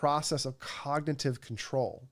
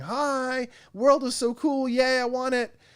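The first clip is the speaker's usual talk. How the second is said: put-on very high, excited, gushing little-kid voice full of wonder; 11 semitones higher, 5 dB louder than usual. Explaining the brain's approach system, acting out an excited kid. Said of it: "a kid in the porch going".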